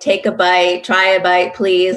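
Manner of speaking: ordinary delivery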